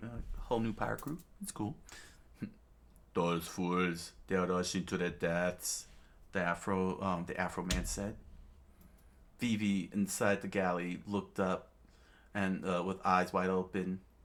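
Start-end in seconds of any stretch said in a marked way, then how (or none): 0.4-5.9 put-on Russian accent, character voice. Reading a story aloud, voicing a character's line in a russian voice. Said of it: "I'll go with the Russian voice".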